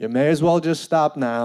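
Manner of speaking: totally calm, composed delivery. Retelling what a cop said while pedaling after them; imitating a cop's calm voice. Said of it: "the calm in his voice".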